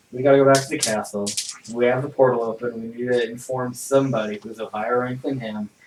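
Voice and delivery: quiet, soft, defeated tone. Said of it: "You sound so defeated".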